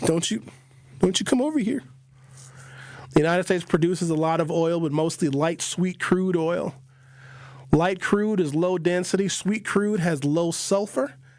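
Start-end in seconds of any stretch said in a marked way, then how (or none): 0.0-1.8 put-on, menacing, threatening Canadian accent. Acting out Canadians refusing a visitor: imitating a menacing Canadian. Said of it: "us Canadians".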